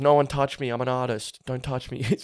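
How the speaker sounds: muttering under breath. Retelling being security escorted through the crowd at a gig: retelling muttering under breath. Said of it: "i was under my breath".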